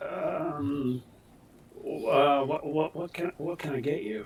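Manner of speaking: unsure, hesitant, slow, halting, stumbling, full of restarts. Voicing a young waiter greeting a customer: hesitant voice. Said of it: "hesitant voice".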